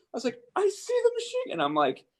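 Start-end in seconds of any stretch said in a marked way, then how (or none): 0.5-1.5 super high-pitched excited voice, higher. Retelling spotting a machine gun over the radio: retelling a super high-pitched excited call. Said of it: "super high pitched, and I'm super excited".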